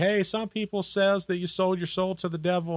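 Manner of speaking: acted, amused, speaking through laughter. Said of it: "laughing when he says it".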